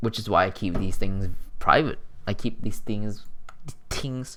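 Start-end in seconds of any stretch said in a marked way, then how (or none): 2.3-4.4 Filipino accent coming through suddenly, unbidden. Mid-explanation, a speaker's filipino accent slips out. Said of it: "Filipino accent came out".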